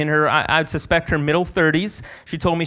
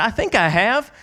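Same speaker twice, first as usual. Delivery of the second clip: put-on Southern American accent, pitched up; 5 semitones higher than usual. Retelling a woman's reply when asked if she'd heard the gospel; southern accent. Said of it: "with her southern accent".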